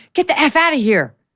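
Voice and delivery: high-pitched, loud, angry outburst. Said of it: "The president's admonitions include".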